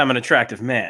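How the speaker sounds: ordinary talk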